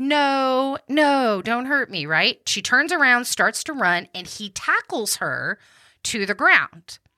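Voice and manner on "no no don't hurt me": mock yelling, higher, slower. Recounting a woman's account of an attack, the speaker replays her cry: retelling a woman's yell. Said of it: "she starts yelling like".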